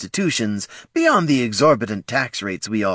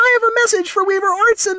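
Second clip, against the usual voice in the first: very high, loud, chirpy little sprite voice; 5 dB louder than usual. A narrator reads a sprite arriving with a message, in a chirping sprite voice. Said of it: "chirped the sprite".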